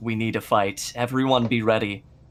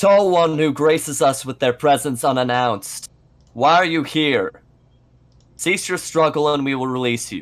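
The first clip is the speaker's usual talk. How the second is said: severe, stern, half-yelled shouting voice; 3 semitones higher, 3 dB louder than usual. Player speaking in character to a giant during a game, stern yelling. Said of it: "kind of yelling at it in a stern voice".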